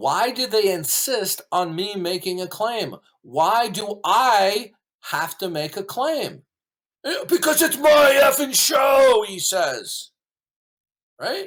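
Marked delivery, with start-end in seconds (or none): 7.0-9.2 high, loud, sneering, mocking catty voice. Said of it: "He says it in a bitch voice".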